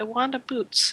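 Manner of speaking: downcast, crestfallen, mumbled mutter. Narrating a scene as Clark, who looks dejected, Clark's dejected mutter. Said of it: "he just mutters".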